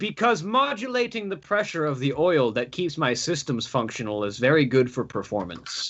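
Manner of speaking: sarcastic, swooping sing-song. Replying in character to a suggestion to get the blood pumping: sarcastic. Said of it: "Sarcastic statement".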